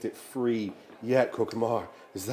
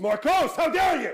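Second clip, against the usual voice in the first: shrill, high, outraged, indignant swooping yell; 6 dB louder than usual. A blinded character, called by the wrong name, corrects it: shouting. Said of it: "It's [name] shouting".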